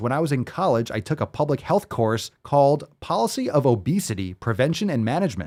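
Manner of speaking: ordinary talk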